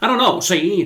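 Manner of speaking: put-on high, old-timey nineteen-twenties voice. Signing off a true crime video in an old-timey 1920s voice. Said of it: "talking like an old-timey nineteen twenties person".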